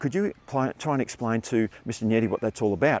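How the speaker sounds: ordinary talk, nothing marked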